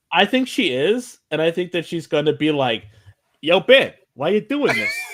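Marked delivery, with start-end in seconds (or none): 3.4-4.9 loud, swooping, clumsy put-on New York accent. Imagining what she is going to say to Ben, put on a bad New York accent. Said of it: "I can't do a New York accent".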